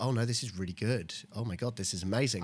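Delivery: normal talking voice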